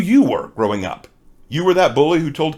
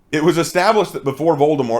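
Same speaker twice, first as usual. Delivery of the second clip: normal talking voice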